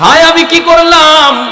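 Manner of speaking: high, loud, anguished, remorseful pleading voice.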